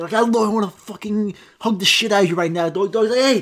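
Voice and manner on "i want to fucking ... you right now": put-on aggressive yelling, higher pitch. In a comedy bit, acting out a dog owner talking to their dog, mock-aggressive shout. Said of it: "Why are you getting so aggressive?".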